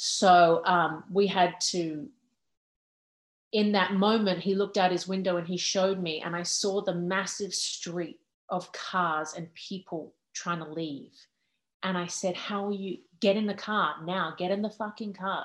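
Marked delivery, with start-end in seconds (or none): 12.3-15.4 imitated screaming. Retelling a phone call, imitating screaming at him to get in the car. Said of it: "literally screaming at him".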